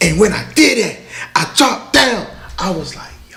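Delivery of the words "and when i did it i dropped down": put-on voice, pitched very high. Retelling how a former football player explained his kneeling: Ray Lewis voice. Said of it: "he even did it in the Ray Lewis voice".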